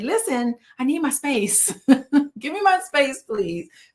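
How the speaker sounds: stern, firm, upfront no-nonsense delivery. Showing how to ask people for space: stern, upfront demand. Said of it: "be a little more stern and say".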